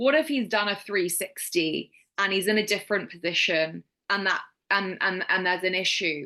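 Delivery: ordinary talk, nothing marked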